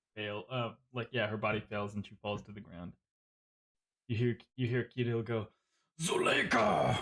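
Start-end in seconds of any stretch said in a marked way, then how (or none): 6.0-7.0 very high, crying, modified werewolf voice. Voicing a werewolf calling out as she falls: werewolf voice crying out. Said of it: "in his, like, werewolf, uh, modified voice".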